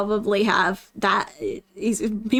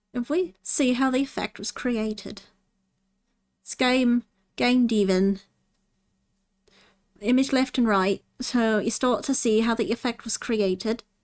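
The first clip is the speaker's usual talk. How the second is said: shoddy, fake half-British accent. Asked to do an impression of a guy's accent during a tutorial, shitty half British accent. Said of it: "My shitty half British accent".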